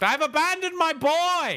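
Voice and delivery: put-on high, loud yell. Naming his pick from There Will Be Blood, Daniel Plainview yell. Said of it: "Keep it down".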